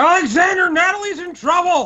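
shrill, very high, urgent shout. Calling out to the others in character: yelling. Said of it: "I'm going to be yelling now".

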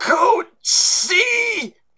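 mock very high, breathless, can't-breathe gasping voice. Imitating the front-office woman's announcement during class: imitating breathless announcer. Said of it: "like they can't breathe".

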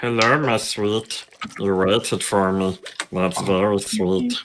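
strange put-on cave-creature voice. Greeting someone in the game who waited: Gollum-like voice. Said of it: "why are you like Gollum or something?".

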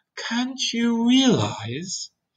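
calm and patient. After a deep breath, a boy answers a blind earthworm, patiently. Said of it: "he said patiently".

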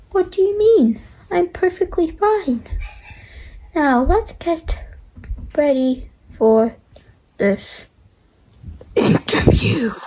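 put-on odd-sounding throat voice. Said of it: "do you have a short throat or something?".

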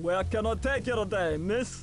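put-on New York-accented voice. A taxi driver greets a passenger who hailed a cab, New York City accent. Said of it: "That recognizable New York City accent".

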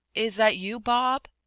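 hesitant, unsure. A man hurrying across the street asks the waiting man: doubtful question. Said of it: "he asked doubtfully".

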